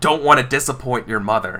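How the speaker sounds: menacing dark voice. Voicing the dead father who won't listen: dark, scary voice. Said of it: "his voice gets, like, dark and, like, scary".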